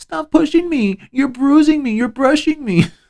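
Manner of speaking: very high, put-on pleading tone. Retelling her line from the audio: imitating a fake plea. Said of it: "she says the whole fake line".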